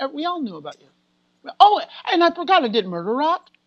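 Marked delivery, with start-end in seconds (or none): 0.0-0.9 put-on Italian accent in English. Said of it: "not with my American accent".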